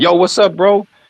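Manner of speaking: put-on street-slang delivery, very high, forced. Imitating a Dominican or Mexican speaker trying out slang: imitating a foreigner's forced slang. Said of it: "we sound to them if we're trying to imitate".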